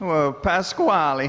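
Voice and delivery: slow, sarcastic tone. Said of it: "you're being sarcastic".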